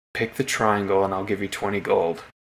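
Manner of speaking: whispering quickly. In a tabletop game, a character bribes another by whispering in his ear: quick whisper. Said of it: "quickly whisper in his ear and say".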